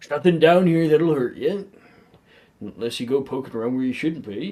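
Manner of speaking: big booming giant voice, fast, loud and reassuring. A narrator leading the group down a hallway, voicing Hagrid's deep booming voice. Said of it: "in his deep, booming voice".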